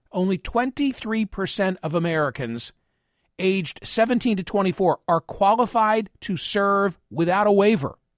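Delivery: very slow, deliberate, word-by-word delivery. Speaker repeats a sentence for listeners, saying it more slowly. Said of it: "I have to say this more slowly".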